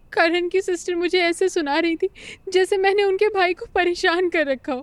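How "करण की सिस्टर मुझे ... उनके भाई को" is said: weeping, tear-choked, crying throughout. Answering a friend who asks why, speaking while crying. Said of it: "तू तो रो क्यों रही है".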